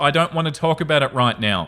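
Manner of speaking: ordinary talk, nothing marked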